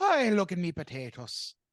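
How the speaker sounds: very slow, drawn-out, sing-song put-on Irish accent. Mocking a stereotype in an argument about doing accents: mock Irish accent.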